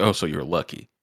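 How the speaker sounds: mocking, taunting tone. Retelling how one character mocked another: imitating a mocking tone. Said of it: "the gall to mock her".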